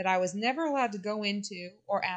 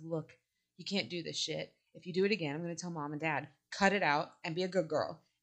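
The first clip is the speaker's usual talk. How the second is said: hushed, low, half-whispered voice; 4 semitones lower, 4 dB quieter than usual. Quoting Whitney going off on Simone; half-whispering as Whitney. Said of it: "kind of half whispering it".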